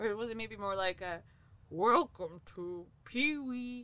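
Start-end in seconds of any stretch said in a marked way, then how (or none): 1.7-3.8 slow, tentative, half-guessing put-on voice. Attempting an impression on request: Pee-wee Herman voice. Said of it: "do your best Pee Wee Herman impression".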